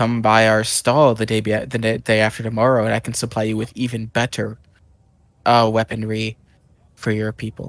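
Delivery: soft, stumbling half-whisper, tripping over words. Speaking in character after a stealth check, trying not to be noticed: half-whispering. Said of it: "Galabar will whisper to him".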